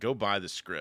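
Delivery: ordinary talk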